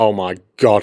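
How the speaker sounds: acted panicked tone. Retelling a moment of worrying about things said that week: retelling own panic. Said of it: "I'm panicking".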